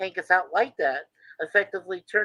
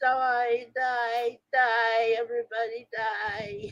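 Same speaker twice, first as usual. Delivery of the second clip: speech like a computer voice; 4 semitones higher, 4 dB quieter than usual. Retelling a scene, the speaker voices the villain grabbing the girl, Red Jack computer voice. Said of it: "perfect Red Jack computer voice".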